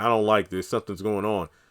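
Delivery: ordinary delivery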